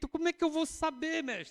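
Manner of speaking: put-on, very high, anguished, distressed, anxious pleading tone. Speaker retelling Pedro's question to his master, acting out a distressed plea. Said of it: "O Pedro lá aflito".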